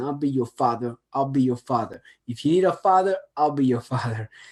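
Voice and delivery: put-on New York accent. Retelling what a psychiatrist told the crowd, in a New York accent. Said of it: "he said it in a New York accent".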